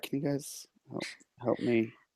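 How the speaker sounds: hushed, low, very quiet murmur. Asking the others for help, in a low voice. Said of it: "very in a in a low voice".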